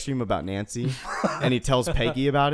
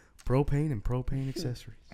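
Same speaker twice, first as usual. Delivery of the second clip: bad put-on Texan voice, quieter; 5 dB quieter than usual. Quoting a cartoon character's catchphrase: bad Hank Hill impression. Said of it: "I can't do a good Hank Hill".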